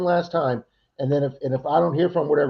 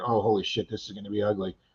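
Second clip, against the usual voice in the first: low muttering under the breath; 6 semitones lower, 6 dB quieter than usual. Retelling opening the door to find him standing there: imitating muttering under breath. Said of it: "under my breath".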